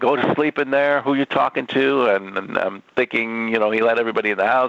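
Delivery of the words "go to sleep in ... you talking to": mock screaming, put-on and pitched higher. Speaker recalls their father yelling at them at night; imitating father screaming. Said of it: "he's screaming".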